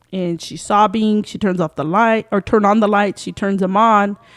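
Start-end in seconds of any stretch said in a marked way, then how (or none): none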